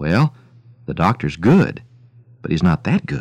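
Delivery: low-key, subdued, quiet delivery. Telling a joke, voicing the vet's assistant after a long silence, in a subdued voice. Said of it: "she said in a subdued voice".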